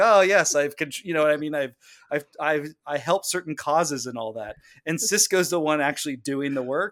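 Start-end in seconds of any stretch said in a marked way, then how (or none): none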